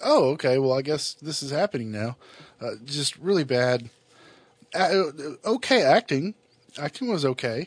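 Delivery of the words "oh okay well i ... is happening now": ordinary delivery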